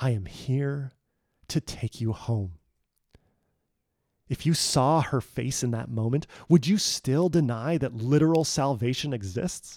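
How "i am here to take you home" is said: gentle, soft, hushed stage whisper. Quoting a rescuer who wakes someone at night: imitating a half-whisper. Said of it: "as she whispers to you".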